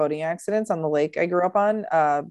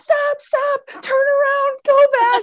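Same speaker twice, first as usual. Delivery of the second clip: mock scream, higher, louder and slower; 5 dB louder than usual. Retelling how a guy on the boat reacted to the throttle, imitating a man screaming. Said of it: "This guy starts screaming".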